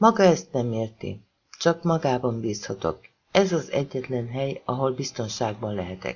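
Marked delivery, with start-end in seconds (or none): none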